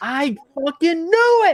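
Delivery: very high, loud, drawn-out yell at top of lungs. Retelling looking up an item's price before leaving the store; retelling a yell. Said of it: "I yelled at the top of my lungs".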